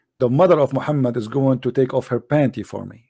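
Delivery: ordinary talk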